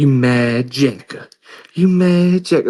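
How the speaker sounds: acted, high, slow, needling, goading jeer. Retelling how one inmate taunted another inmate: imitating an inmate taunting. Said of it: "talk the most shit to him".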